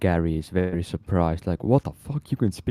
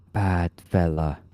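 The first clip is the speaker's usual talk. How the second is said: hushed, whispered, broken Common speech. A tabletop player's character points and tells an ally, whispering in broken Common. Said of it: "whisper to Alratorin in, in very broken common".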